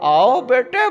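very high, goofy cartoon character voice.

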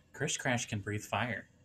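soft, secretive whisper, very quiet. Voicing a character whispering so no one else hears: whispering as Krish Crash. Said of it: "whispers to you so no one else hears".

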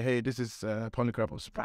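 normal talking voice

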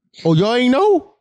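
high, mocking tone. Retelling what a man says every time: mocking imitation of him. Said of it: "he be like".

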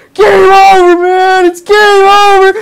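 very high, very slow, drawn-out loud screaming. Retelling the guy playing the Marines running through a game room: imitating a man screaming. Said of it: "the guy playing the Marines just screaming".

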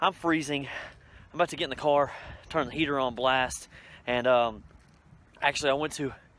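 out of breath, panting between words. Talking to viewers after running in cold weather, out of breath. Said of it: "I gotta catch my breath".

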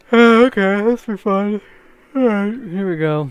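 yawning sarcastically. About to start on something, the speaker says it with a sarcastic yawn. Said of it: "One of those sarcastic yawn".

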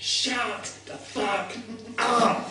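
furious, enraged scream.

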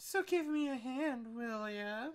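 alluring, seductive, womanly feminine voice. Performer redoing a character's line asking for a hand, more seductive and more feminine. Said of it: "more seductive and a little bit more feminine".

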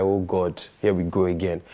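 ordinary talk, nothing marked

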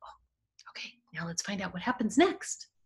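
unvoiced, hushed whisper.

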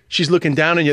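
ordinary delivery

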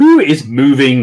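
wary, doubting, suspicious tone. Mr. Rye questions Sergeant Dawson's claim: suspicious question. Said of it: "Rye asked suspiciously".

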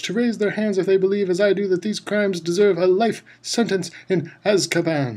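loud, high shout. Mr. Crouch calls on the jury in the dungeon courtroom, shouted. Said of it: "shouted Mr".

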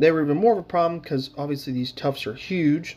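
ordinary talk

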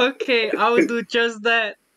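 giggling, laughing through the words. Agreeing to send the money online as asked, laughing while speaking. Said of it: "I'm sorry for laughing".

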